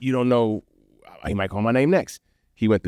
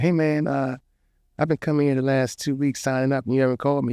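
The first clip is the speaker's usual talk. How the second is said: mock anxious, hesitant, nervous voice, pitched up; 6 semitones higher than usual. Retelling walking up to the host after the act: retelling own nervous words. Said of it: "I was so nervous".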